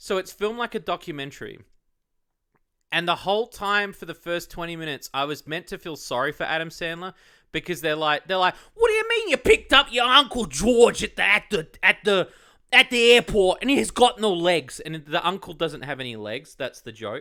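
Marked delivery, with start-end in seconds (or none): 8.7-14.8 very loud, put-on, swooping Boston accent. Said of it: "Everyone's got the accent".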